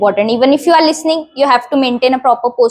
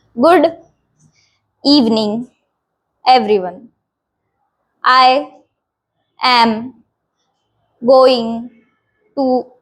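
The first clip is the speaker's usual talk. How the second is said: slow and halting, words split by long gaps. Showing how overly long pauses in a speech sound, long pauses between words. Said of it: "ऐसे बहुत बड़े pauses ले रहे".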